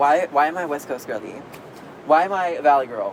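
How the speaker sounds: normal talking voice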